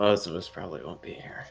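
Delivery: quiet muttering under breath. Answering a departing character's goodbye in character: muttering under breath. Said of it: "under my breath".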